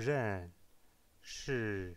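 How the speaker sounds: ren and shi both with high-to-low falling tone. Chinese lesson in french on the fourth tone: falling tone on ren and shi. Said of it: "c'est deux fois le ton numéro quatre, le ton descendant".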